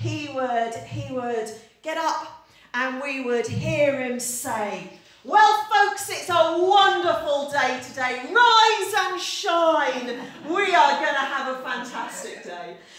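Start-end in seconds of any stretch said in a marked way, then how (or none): 5.2-12.8 loud, booming army-style bellow, shine stretched. Imitating him waking everyone in their sleeping bags, big booming army voice. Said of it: "in his big booming army voice".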